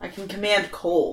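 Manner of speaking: normal talking voice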